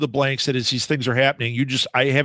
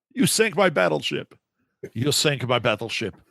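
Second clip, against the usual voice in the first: slow, drawn-out movie-character voice. Quoting a line from Bill and Ted's: Bill and Ted's movie impression. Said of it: "That was a pretty good impression".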